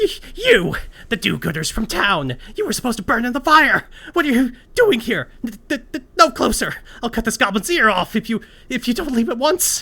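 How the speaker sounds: shrill, very high, terrified stammer. Voicing a terrified halfling holding a goblin hostage: shrill, stammering terrified voice. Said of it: "His voice is shrill and stammering".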